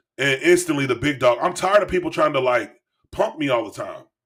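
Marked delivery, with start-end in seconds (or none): none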